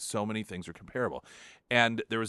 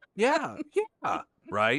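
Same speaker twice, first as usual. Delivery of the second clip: put-on high, swooping, sing-song, dismissive teenage voice; 7 semitones higher, 5 dB louder than usual. Imitating a teenager answering a parent who asks about trust, imitating a teen's high voice. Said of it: "the way that their voice gets high".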